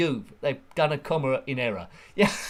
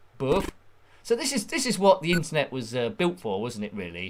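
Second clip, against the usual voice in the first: normal talking voice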